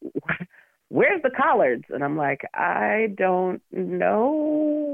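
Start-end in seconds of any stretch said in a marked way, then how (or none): 0.0-1.8 disappointed, demanding, high, swooping half-yell. Speaker retells disappointed garden visitors complaining: retelling mild yelling. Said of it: "kind of yelling at me".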